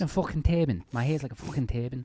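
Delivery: put-on Liverpool accent. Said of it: "let me do Liverpool first".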